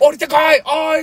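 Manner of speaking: put-on excited shout. Recalling seeing a UFO, retelling an excited shout. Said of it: "」とか叫んでたんだけど、".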